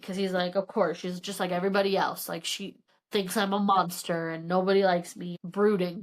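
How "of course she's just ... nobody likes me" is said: ordinary delivery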